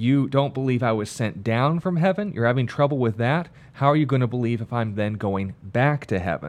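ordinary talk

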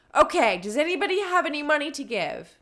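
very loud, angry, forceful shouting yell. Reading a story aloud, a man demanding money from a crowd: angry commanding yell. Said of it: "started yelling in a very commanding tone".

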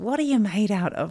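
put-on Australian accent. Quoting a dad's repeated question, in an australian accent. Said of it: "in his Australian accent".

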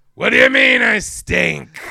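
sassy, very loud, slow raspy voice. Retelling a movie monster's line in a Harvey Fierstein voice. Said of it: "the monster sounded like it was Harvey Fierstein".

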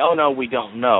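plain

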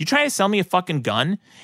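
mock offended, worked-up, angry, really upset tone. Telling a story, quoting a man who was offered a gun by a kid; mock-angry. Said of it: "got really fucking upset".

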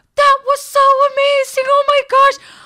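put-on very high, squeaky little-old-lady voice. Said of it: "she has this high-pitched little voice".

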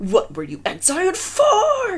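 shrill, swooping, very high, drawn-out angry shout. In a kitchen, a man confronts the narrator, shouted. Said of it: "he shouted".

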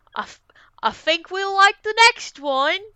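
really bad put-on English accent. Answering another speaker's question in character, bad English accent. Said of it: "This is a really bad accent".

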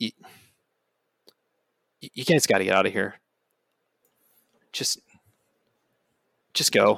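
hushed, soft half-whisper. Voicing Nell as she comes up to the group, whispering as Nell. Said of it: "sort of like whispers".

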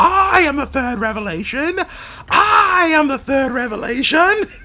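very high, loud, screamed delivery. Quoting a favorite movie moment, imitating a scream. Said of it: "And just screaming".

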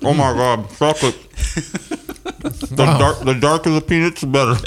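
speaking with mouth full. Eating chocolate peanuts with friends, talking with mouth full. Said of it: "My mouth is full of peanuts".

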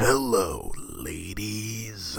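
rough, gravelly voice. Speaker quoting a porn star's catchphrase, in a gravelly voice. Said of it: "just like with that gravelly voice".

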